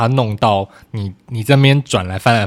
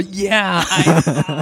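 mock shouting, higher pitch; 8 semitones higher than usual. Joking about how to answer a scam call: mock shouting into the phone. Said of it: "对着电话大喊说".

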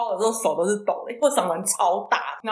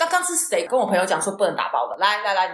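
ordinary talk

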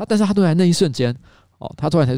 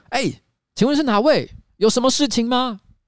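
put-on, loud, very high-pitched, full-throated roar; 10 semitones higher than usual. Retelling calling through a door to an unseen visitor: retelling own loud shout. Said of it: "我又大吼了一声".

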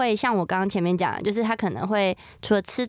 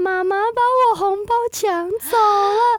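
put-on very high, slow, tearful little girl's sobbing wail; 12 semitones higher, 5 dB louder than usual. Mother retelling how her daughter came out of her room and began crying: imitating daughter crying. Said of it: "就开始哭".

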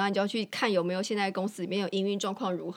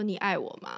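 mock sincere, dead-serious, earnest tone. Late at night before sleep, she re-enacts asking him, retelling an earnest question. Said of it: "用用我很认真的语语气跟他说".

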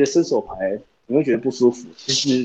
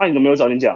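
rude, fierce, harsh tone. Retelling how the service clerk answered back, a mock-fierce retort. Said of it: "这么凶啊".

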